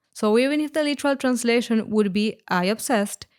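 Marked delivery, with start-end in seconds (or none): none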